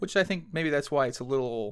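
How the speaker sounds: plain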